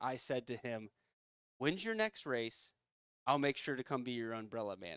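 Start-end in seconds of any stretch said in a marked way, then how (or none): 1.6-5.0 put-on, snarky, sarcastic, swooping retort. Retelling a reply to someone in an online group: imitating own sarcastic reply. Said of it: "with my sarcastic nature".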